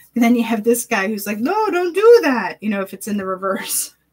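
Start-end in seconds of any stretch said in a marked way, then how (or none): 1.3-2.5 high, slow, fretful, worried cartoon voice. Narrating two figures like a cartoon, voicing the worried one: cartoonish worried voice. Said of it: "I'm narrating these like a cartoon".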